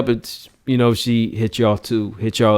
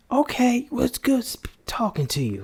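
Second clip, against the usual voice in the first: put-on woman's voice, much higher and quieter; 13 semitones higher, 7 dB quieter than usual. Retelling a conversation with a woman: imitating a woman's voice. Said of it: "That is not no woman's voice".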